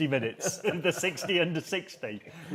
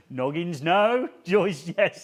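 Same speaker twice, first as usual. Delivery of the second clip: put-on slow, shouted voice in a South African accent; 3 semitones higher, 6 dB louder than usual. Retelling the line Joe kept shouting all day, shouted South African accent impression. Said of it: "So he did it in the voice".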